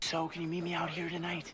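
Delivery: secretive, hushed, high-pitched half-whisper. A character asking the other to meet out here tonight, half-whispering. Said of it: "Why are you whispering?".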